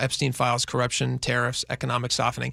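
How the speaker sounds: ordinary talk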